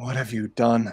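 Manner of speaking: breathless panting voice. Doran, lying on the cave floor after the fight, speaks: Doran, heavy breathing. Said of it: "heavy breathing".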